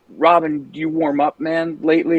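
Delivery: ordinary delivery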